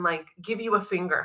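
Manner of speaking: normal talking voice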